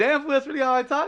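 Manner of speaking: surprised high voice. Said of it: "And I was like".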